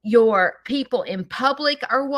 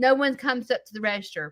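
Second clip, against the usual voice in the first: plain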